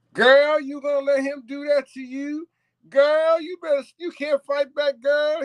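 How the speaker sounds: very high, woman-like voice. Retelling what a man filming said: imitating a man who sounded like a woman. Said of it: "'Cause he sounded just like a woman".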